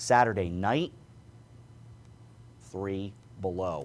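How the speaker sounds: long, suspenseful, dramatic pause before "three below". Giving saturday night's forecast low: dramatic pause before three below. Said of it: "that was a dramatic pause".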